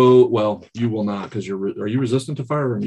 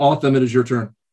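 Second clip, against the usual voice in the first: ordinary talk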